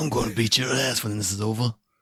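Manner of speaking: put-on whispery British accent. Showing the voice used in Amanda's story; whispered Jason Statham British accent. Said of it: "Everything was the whisper British".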